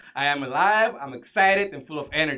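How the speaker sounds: loud, energetic, pumped-up yelling. Showing how the affirmation is said in the car: yelling an affirmation. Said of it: "do that right now".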